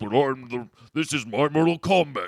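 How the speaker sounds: very loud, put-on big dumb brute voice. Describing the leader of Outlaw, in a big dumb idiot voice. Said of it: "Like like this kind of voice".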